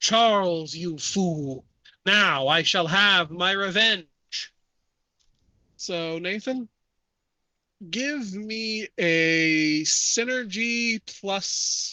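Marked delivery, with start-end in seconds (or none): 0.0-4.5 put-on heavy, deep, thunderous French accent. In a game, a voice from the fog addresses charles in a deep booming french accent. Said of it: "a deep, booming voice says in a heavy French accent".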